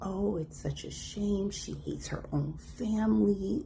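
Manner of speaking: hushed, slow, high-pitched.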